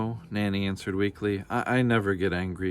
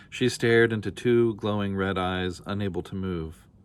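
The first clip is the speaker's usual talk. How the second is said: ordinary delivery, nothing marked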